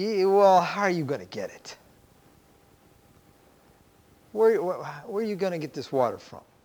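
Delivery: mocking, taunting tone. Narrating a proud woman's reply to a man at a well, mocking tone. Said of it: "perhaps we can hear a mocking tone in her voice".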